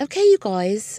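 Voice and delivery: clumsy, bad put-on British accent. Speaker tries the phrase for UK listeners in a bad British accent. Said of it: "I'm trying to say it with a British accent".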